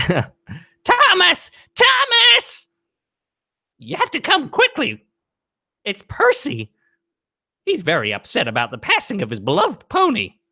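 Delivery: very high, sing-song, swooping character voice. Doing a voice that someone asked for: Edward voice. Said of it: "do my Edward voice".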